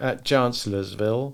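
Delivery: plain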